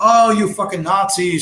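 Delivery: high-pitched screaming. Retelling how a woman screamed insults at passing strangers in a video. Imitate someone screaming. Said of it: "She's screaming".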